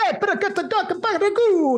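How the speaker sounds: put-on very high, over-the-top Italian New York accent. Quoting a line from something they love, in an almost offensive italian new york accent. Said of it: "almost offensive uh, Italian New York accent".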